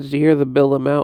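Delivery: ordinary talk, nothing marked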